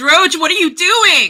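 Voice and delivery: high, loud yell. Voicing a character who calls out to another character: in-character yell. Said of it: "I'm gonna yell out at Droge".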